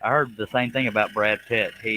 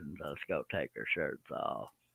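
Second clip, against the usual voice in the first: very quiet, crackly, soft, barely audible rasp; 7 semitones lower, 14 dB quieter than usual. Retrying an impression the others judged, raspy Matthew McConaughey impression. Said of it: "a little more crackle in my voice".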